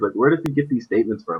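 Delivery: plain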